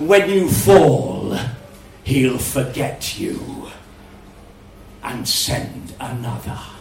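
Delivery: low, oily, amused, unctuous, honey-thick voice. The monster answers the hero Geraint in the dark, unctuous and thick as honey. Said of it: "Then the [name]'s voice, unctuous and thick as honey, echoed from the surrounding walls. ... unctuous and thick as honey".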